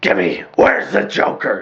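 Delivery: rough, gravelly hero rasp, words ground out. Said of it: "I like that gravelly voice".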